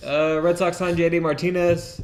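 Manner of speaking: high, loud, excited voice. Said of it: "Could not be more excited".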